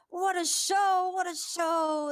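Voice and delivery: very high, loud, booming arena announcer voice. Narrating a fight, the announcer's voice comes back on in the arena; arena announcer voice. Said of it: "the announcer voice comes back on".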